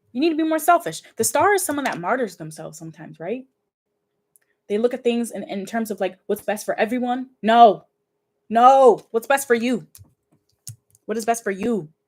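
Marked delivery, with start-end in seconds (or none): 7.4-9.9 very slow, deliberate, loud, drawn-out yelling. Telling a listener they need to be more selfish, yelling. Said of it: "I'm sorry if I'm yelling".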